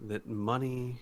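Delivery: ordinary delivery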